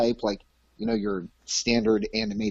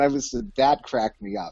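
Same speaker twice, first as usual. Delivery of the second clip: usual speaking voice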